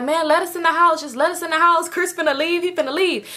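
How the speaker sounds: high, earnest, begging, pleading tone. Retelling friends pleading with a man who ordered everyone out: mock-pleading. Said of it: "so they like trying to plead with him".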